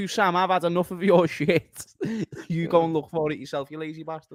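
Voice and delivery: acted high, exasperated, fed-up angry rant. Retelling another speaker's snappy retort: imitating Tom's angry retort. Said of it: "That was so unexpected from Tom".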